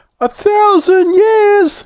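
very high, howling cry. Narrator reading several story characters' outcry, howled. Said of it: "Howled Squeaky".

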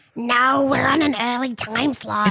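put-on strong Australian accent. Acting out a bit as Marge, answering Homer, in Marge voice with a strong Australian accent. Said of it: "It's so Australian".

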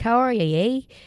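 put-on Canadian-sounding accent. Retelling how a gas station clerk in Colorado greeted them, Canadian-sounding accent. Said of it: "she sounded Canadian".

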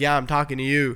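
ordinary talk, nothing marked

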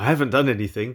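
pushing back, defensive tone. A man caught off guard by another man's sudden appearance, speaking defensively. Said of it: "he said defensively".

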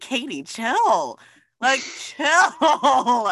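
slow, high mock brush-off, "chill" drawn out, laughing.

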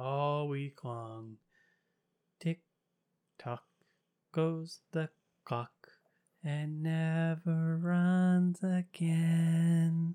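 creepy eerie voice. Joking that the hosts have been sitting here all week: creepy voice. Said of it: "I just wanted to sound really creepy".

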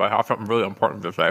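talking through a full mouth, chewing mid-sentence. Apologizing for eating chips, a speaker talks while chewing chips. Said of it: "I'm chewing chips".

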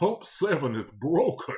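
put-on cross, grumbling old English gentleman voice. Retelling what a man said at the register, imitating an angry old english man. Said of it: "He sounded like an old English man or something".

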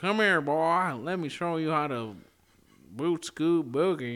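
talking like a Texan. A texan shows how they can talk like a texan: texan accent. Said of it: "I can talk a little bit like a Texan".

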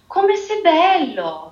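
high, unchecked, admiring outburst. Narrator reading the little prince's words to the flower, bursting with admiration. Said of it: "non poté frenare la sua ammirazione".

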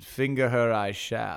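put-on, archaic old English way of talking. Retelling how a man voiced one side of a courtly exchange; old English voice. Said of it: "doing this voice of like an English, like old English".

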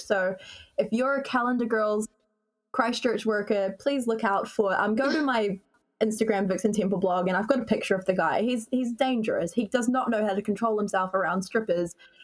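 ordinary delivery

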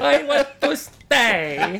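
high, loud Argentine accent, "stay" dragged out. Repeating a quoted line after being asked for it in Messi's accent. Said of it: "but in Messi's accent".

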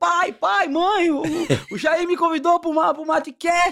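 very high-pitched, excited shout. Retelling running off shouting to parents: imitating own past shouting.

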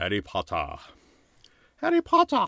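swooping, sing-song elf voice. Talking about party guests dressed as a famous wizard, doing a Dobby voice. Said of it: "I was trying to sound like Dobby".

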